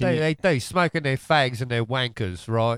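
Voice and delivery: put-on British accent. Joking about Brits with the group, putting on a mock British accent. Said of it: "Give us a little British accent".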